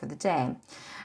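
ordinary delivery

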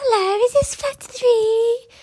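drawn-out moan. Retelling a stranger's voice on the door buzzer: imitating a moaning voice. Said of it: "a bit like moaning".

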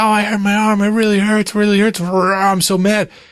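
put-on high-pitched, upset little kid voice. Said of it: "she comes out".

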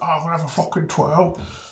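put-on chav voice. Retelling a lad who came into the shop late at night, imitating a chav. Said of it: "he was like a proper chav".

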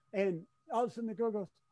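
normal talking voice

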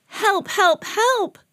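calling out. The little blue truck, stuck with the dump truck, crying for help. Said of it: "cried the little blue truck".

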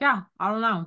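put-on voice spoken through a wide-mouthed grimace. Imitating a reality show cast member's Joker mouth: imitating Kelly Bensimon's Joker mouth. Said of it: "Joker mouth where she's like".

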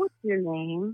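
mimicked slow, deliberate talk. Mocking how he talks when he phones a store, imitating slow deliberate talk. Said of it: "He talks like super slowly and like deliberately".

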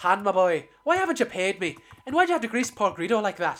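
put-on Irish or Scottish accent. Retelling a deleted scene, imitating Irish or Scottish accent. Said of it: "Irish or Scottish".

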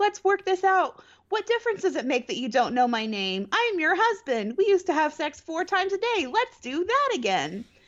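earnest, begging, pleading voice. Retelling how Clark begs her to work it out: imitating Clark begging. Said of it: "Clark's begs her".

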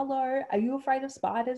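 put-on yelling out. Recounting calling out to a passing man for help: retelling a yell. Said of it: "And I yell out to him".

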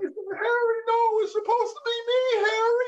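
very high, teary, tearful crying voice. Retelling watching the end of Armageddon: retelling own crying. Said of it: "And I'm crying".

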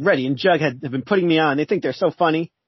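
ordinary delivery

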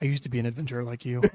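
hushed, low, very soft, barely audible half-whisper. Narrating a game scene where a character half-whispers to the door, half-whispering. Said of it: "Then he whispers to the door".

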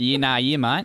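put-on Australian accent. Asked to do their Aussie accent, the speaker answers in an Aussie accent. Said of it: "do your Aussie accent".

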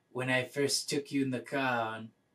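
terrible fake French accent. Retelling the end of a film, the speaker quotes the male lead: terrible French accent. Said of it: "terrible French accent, I'm sorry".

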